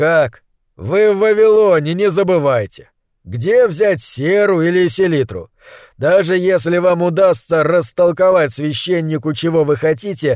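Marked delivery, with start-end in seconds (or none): none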